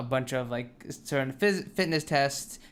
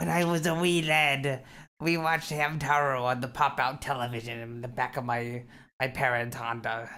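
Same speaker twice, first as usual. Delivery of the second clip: put-on pirate voice with pirate accent throughout. Speaker says the line they expected the other person to say, in pirate voice. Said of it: "Why did you make it sound like a pirate?".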